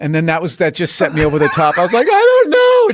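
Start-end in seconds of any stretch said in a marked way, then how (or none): 2.1-2.9 loud, very high-pitched laughing-crying. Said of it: "Just crying, laughing".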